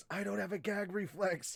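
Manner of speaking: soft, half-whispered stage whisper. Describing a funny moment from a show, retelling a girl's half-whisper. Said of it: "the girl whispers".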